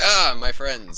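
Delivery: slow warm drawn-out voice.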